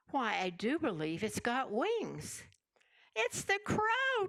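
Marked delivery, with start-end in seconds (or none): 3.1-4.2 shrill, very high, alarmed cry. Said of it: "cried in a shrill voice of alarm".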